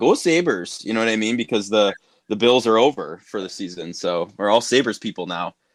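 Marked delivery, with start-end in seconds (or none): 0.0-0.8 put-on Canadian accent, pitched up. Speaker imitates how people now cheer for the Sabres, in a Canadian accent. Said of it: "in a Canadian accent".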